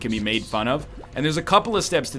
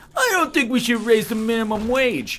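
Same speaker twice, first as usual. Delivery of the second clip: put-on goofy, high, silly mocking voice; 10 semitones higher, 3 dB louder than usual. Showing how to make an opinion look ridiculous: funny mocking voice. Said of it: "repeat it in a funny voice".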